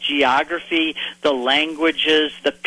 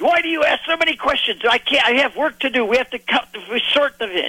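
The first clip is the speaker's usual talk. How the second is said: put-on very thick Hebrew accent, very high pitch; 9 semitones higher than usual. Speaker quoting the fishermen he questioned, in a thick Hebrew accent. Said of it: "In very thick Hebrew accent".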